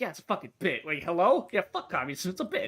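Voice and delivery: speech mixed with laughter. Retelling a reply that the communism talk was a bit: imitating Act Man laughing. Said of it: "smiling and laughing".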